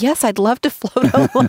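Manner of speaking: put-on, very high-pitched, eager, excited voice. Retelling the brother's eager answer to an offer: imitating someone excited. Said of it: "he got so excited".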